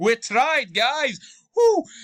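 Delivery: high, loud mock excited cheer.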